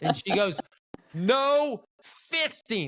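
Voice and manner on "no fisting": very high, shrill, blaring and very loud. Retelling an old man's wife repeating herself to him: acting out a so-loud repeat. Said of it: "Like so loud".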